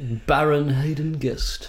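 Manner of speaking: attempted posh accent. Saying a title after being asked for a good accent: attempted high-class accent. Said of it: "Can someone do it in, like, a good accent?".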